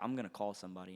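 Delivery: mock dead-serious, deadly serious tone. Retelling a man's threat after he yelled about knocking, mock dead-serious threat. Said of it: "he's dead serious".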